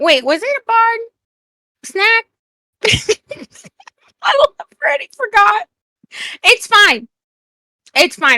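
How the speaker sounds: talking through giggles. Correcting a forgotten nickname: laughing while talking. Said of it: "I'm sorry for laughing".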